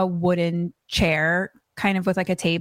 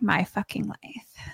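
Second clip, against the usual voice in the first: put-on whisper, quieter; 6 dB quieter than usual. Retelling a scene where a character mutters to herself: imitating a whisper. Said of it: "whispers to herself".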